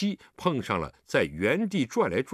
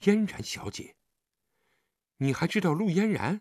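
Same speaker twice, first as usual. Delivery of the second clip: deeply amazed, astonished, pitched up; 5 semitones higher than usual. A man hears someone he frightened stammer out an answer, greatly astonished. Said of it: "李元芳大为惊异".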